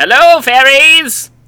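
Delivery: slow, loud, high-pitched calling voice.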